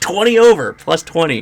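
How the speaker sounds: excited, high-pitched and loud.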